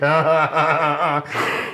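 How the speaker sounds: play-acted, very slow, drawn-out, unhinged laugh. Speaker recalls laughing as if losing their mind: retelling an unhinged laugh. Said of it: "that like laugh where it's like I felt like I was losing my mind".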